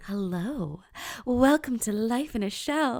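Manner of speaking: teasing, sultry, playful put-on sexy voice. Speaker with a sore throat tries an intro: mock sexy voice. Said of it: "you're welcome for the sexy voice".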